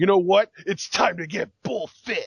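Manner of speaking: stirring, loud, inspirational pep-talk delivery, big and loud. Retelling a commercial's big moment after he stands up: imitating Bull Dempsey's inspirational voice. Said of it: "he gets this inspirational voice".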